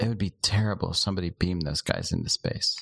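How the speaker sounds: sidelong aside. Speaking in character to the captain, said under the breath. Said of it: "I say under my breath to Captain Akul".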